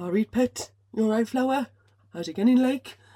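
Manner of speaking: friendly, loud, high, put-on Newcastle Geordie accent. Finnish speaker imitating Newcastle butchers greeting her, in a Geordie accent. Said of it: "that was like my version of Geordie accent".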